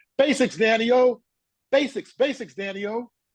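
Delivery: high-pitched, loud scream. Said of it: "him screaming down the sidelines".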